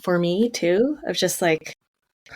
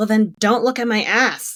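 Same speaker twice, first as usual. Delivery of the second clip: put-on loud, angry yell; 3 semitones higher than usual. Retelling how a woman yelled back at the men questioning her, retelling an angry yell. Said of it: "And then she yells".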